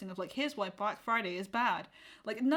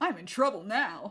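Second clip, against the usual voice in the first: put-on over-the-top American kids comedy movie trailer voice; 4 dB louder than usual. Describing an actor's funny bit, doing his line in an American kids comedy trailer voice. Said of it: "I'm in an American kids comedy trailer voice".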